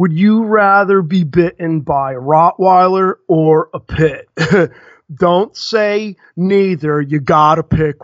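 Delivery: put-on burnout stoner voice. Reading a viewer's comment aloud on the channel, in a burnout voice. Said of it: "I have to do it in burnout voice".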